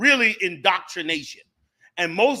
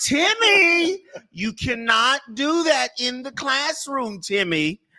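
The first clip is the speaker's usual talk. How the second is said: mock high schoolteacher voice, name drawn out; 6 semitones higher than usual. Speaker does the voice of a third-grade teacher, Miss Leminski teacher voice. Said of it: "that was the voice of your teacher".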